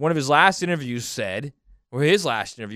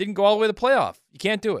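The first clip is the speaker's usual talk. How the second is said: high, smug lecturing tone. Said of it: "he's so smug".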